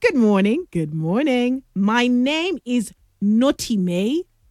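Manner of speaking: ordinary talk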